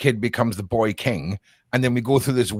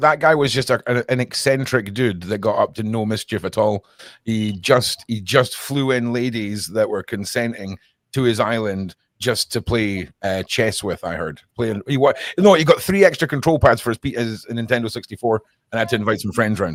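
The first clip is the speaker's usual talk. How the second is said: plain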